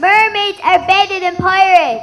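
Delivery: with full conviction, sincerely meant. Asked to repeat the forced line, saying it like you mean it. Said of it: "say it like you mean it".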